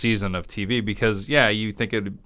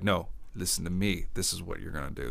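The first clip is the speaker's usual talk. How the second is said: mock mean talk, quieter; 3 semitones lower, 9 dB quieter than usual. Describing a premise where a man talks to kidnappers by phone, imitating mean talk. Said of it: "He talks mean to them".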